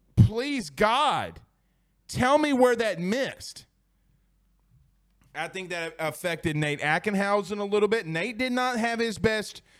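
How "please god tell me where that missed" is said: high, put-on crying out, like yelling. Retelling yelling at the tv over the umpire's calls: imitating own yelling at tv. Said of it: "I'm sitting here yelling at the T V".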